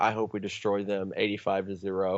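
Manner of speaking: ordinary delivery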